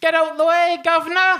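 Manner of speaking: put-on English accent. A French speaker pretends to drive in England, using a fake British accent. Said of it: "vous m'habituer à mon accent".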